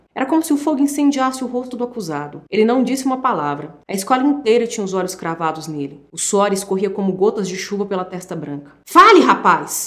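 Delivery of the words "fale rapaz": loud, harsh, commanding schoolmaster-like yell. Narrator reads a teacher shouting at an accused boy, shouting. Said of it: "Gritou Lugari".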